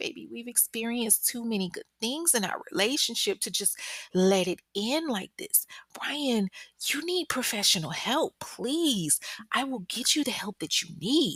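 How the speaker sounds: honeyed, coaxing tone. Retelling the captive coaxing her captor: imitating sweet talking. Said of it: "she gets to sweet talking him".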